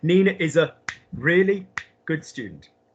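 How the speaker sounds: brief pauses on either side of the stressed word. English lesson on word stress, with pauses around the stressed word. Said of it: "We pop a pause before a word we stress in English, and we pop a pause after it. ... Hear the pauses?".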